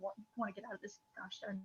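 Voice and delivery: muttering under breath. The woman with the blue hat, told to give three crates, muttering under her breath. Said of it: "she like mutters under her breath like".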